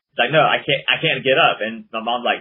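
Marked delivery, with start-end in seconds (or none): none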